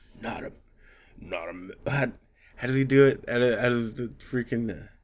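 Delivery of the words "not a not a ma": put-on gravelly voice, lower and quieter.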